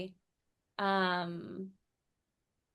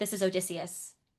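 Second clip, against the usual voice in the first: ordinary talk, nothing marked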